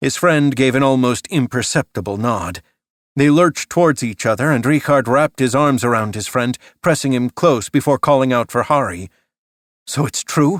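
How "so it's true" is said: hushed, barely voiced whisper. Reading a story aloud, a character's question: whispered. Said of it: "whispered Fritz".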